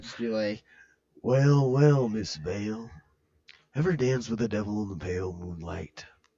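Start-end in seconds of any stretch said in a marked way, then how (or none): 1.2-6.0 low, slow, drawn-out drawl. Showing the other speaker the voice they like, address Miss Vale in a Jack Nicholson impression. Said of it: "Do do do the Jack Nicholson one".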